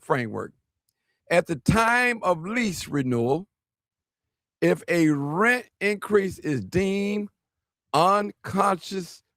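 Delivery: careful, unhurried, slow and deliberate reading. Rereading a rent proposal aloud to listeners: reading slowly. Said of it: "Let me read it a little slow".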